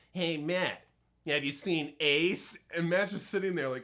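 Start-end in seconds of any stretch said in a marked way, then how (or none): 0.2-2.6 mock, drawn-out, very slow sneering voice. Retelling what a guy walking down the hall asked someone: imitating a sneering voice. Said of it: "he had this kind of like like sneering voice".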